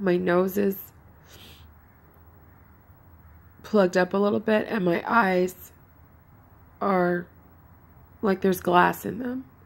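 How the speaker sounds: raspy, hoarse, scratchy voice. Describing an allergic reaction, in a raspy voice. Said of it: "my voice is all raspy now".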